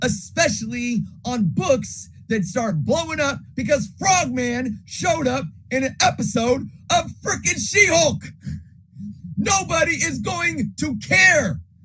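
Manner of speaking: full-on yelling, very loud and very high-pitched. Speaker addressing his audience, yelling. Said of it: "I know I'm yelling".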